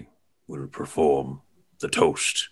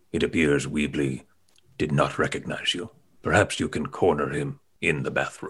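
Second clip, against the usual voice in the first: muttered under breath, lower and quieter; 2 semitones lower, 4 dB quieter than usual. Narrating a character's remark, said under his breath. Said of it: "says under his breath".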